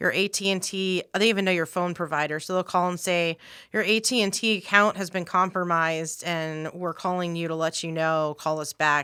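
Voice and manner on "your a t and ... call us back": ordinary talk, nothing marked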